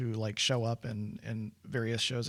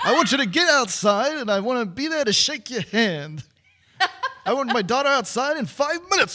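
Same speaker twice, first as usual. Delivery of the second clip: shrill, very high, very loud put-on voice; 13 semitones higher, 12 dB louder than usual. Quoting a girl's dad speaking to Rooney, imitated character voice. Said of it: "Let me see if I can do it".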